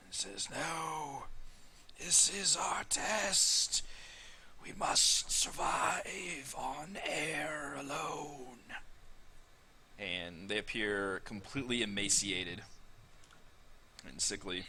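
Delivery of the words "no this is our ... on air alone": dry, papery rasp, very slow. Narrating a scene, voicing a figure who tries to protest and squirm away: dry, raspy, papery whisper. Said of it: "whispers with like a little papery, like awful, dry, raspy voice".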